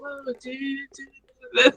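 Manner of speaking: soft, mellow, calm woo-woo tone. Describing who was there, the speaker quotes Maya, imitating Maya's woo-woo energy. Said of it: "Like she's very woo woo".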